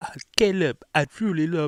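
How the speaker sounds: very high, botched, bad Russian accent. Imitating a fake fan talking to Caleb: bad Russian accent. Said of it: "I can't do a fucking Russian accent".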